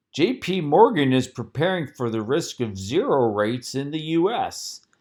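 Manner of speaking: mock, derisive, mocking put-on voice. Quoting what he said about J P Morgan and zero rates, in a mocking voice. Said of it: "yes, I did use my mocking voice".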